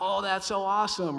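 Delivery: very loud, high, faked over-eager excitement. Retelling the older brother's reply on the phone: imitating forced excitement. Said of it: "he did his best to sound excited".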